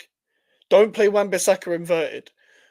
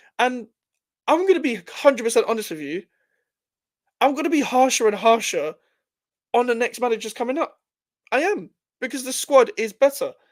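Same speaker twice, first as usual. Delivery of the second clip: pitch creeping steadily higher as it goes; 5 semitones higher than usual. Speaker talking about his club's next managers, voice rising higher. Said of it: "my voice is getting higher and higher".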